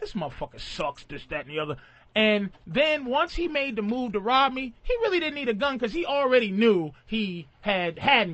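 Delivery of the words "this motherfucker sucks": put-on mutter under breath, lower and quieter. Retelling what a robber said about him: imitating someone muttering under breath. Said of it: "saying shit under his breath".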